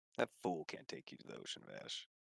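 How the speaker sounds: very quiet, breathy, whispered cowboy voice. Voicing the cowboy who answers a player: cowboy character voice. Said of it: "the cowboy looks at you, and he's like".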